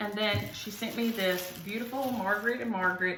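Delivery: normal talking voice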